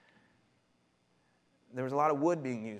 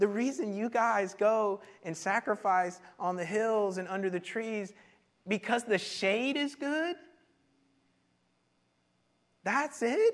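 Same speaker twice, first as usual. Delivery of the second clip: high-pitched, slow, drawn-out, mocking disbelief. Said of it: "he's kinda mocking them here".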